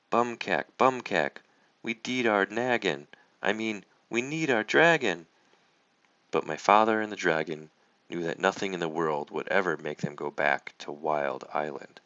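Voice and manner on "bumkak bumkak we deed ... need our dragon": small voice shrieking with excitement. Reading a story aloud, a tiny voice calls out as the dragon passes: tiny excited screaming voice. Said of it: "they heard a tiny excited voice scream".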